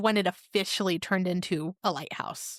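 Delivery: ordinary talk, nothing marked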